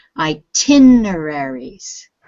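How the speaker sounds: itineraries with the tin syllable hit. Pronunciation practice with a student, stress on tin in itineraries. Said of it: "The stress is on the tin".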